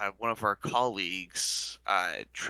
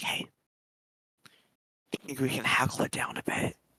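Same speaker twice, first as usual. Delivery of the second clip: high, whispered voice, spoken to the side; 6 semitones higher than usual. Turning to Therum to speak to him, whispering. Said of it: "Like whisper to Therum".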